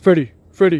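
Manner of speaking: loud owl-character calling voice. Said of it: "he's gonna wake up Freddy".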